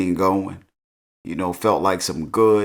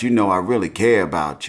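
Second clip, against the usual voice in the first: usual speaking voice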